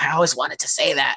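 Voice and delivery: hushed whisper. Acting out a short character standing over a kneeling player, whispering. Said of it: "he kind of whispers to you".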